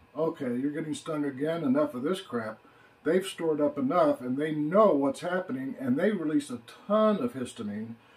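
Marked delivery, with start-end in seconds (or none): none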